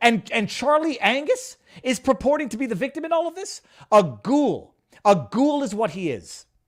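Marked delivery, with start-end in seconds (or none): 3.9-6.4 very slow, loud, drawn-out furious yelling. Ranting about a man claiming to be the victim, the speaker gives an angry scream. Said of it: "I can hear my wife hearing me scream".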